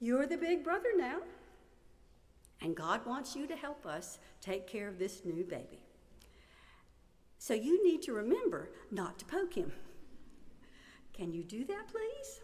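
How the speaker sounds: patient, very calm, soothing motherly voice. A mother retells reprimanding her older son in the car, in a calm maternal voice. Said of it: "in my calmest, most maternal voice".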